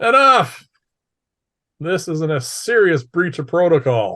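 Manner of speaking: clear, loud, commanding bellow with authority. After a long commotion, a gentleman cuts in with a loud, bellowing, clear voice. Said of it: "a loud, bellowing, clear voice says".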